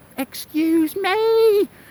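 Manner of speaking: play-acted piercing, shrill, very high-pitched screech. Retelling a woman calling after him as he walked away, imitating a screech. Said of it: "I heard this screech coming from behind me".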